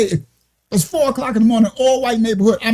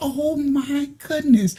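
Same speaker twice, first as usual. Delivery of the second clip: put-on, heart-struck, sorrowful dismay in female voice; 4 semitones higher, 5 dB quieter than usual. Retelling an Uber passenger's reaction: imitating a heartbroken lady. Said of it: "Like, her heart was broken".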